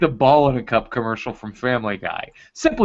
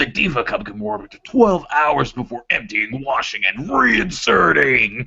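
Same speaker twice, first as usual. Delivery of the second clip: really aggressive voice. Reading product copy aloud after being told to, really aggressive voice. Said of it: "Just say it in a really aggressive voice".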